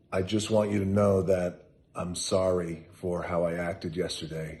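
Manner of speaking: usual speaking voice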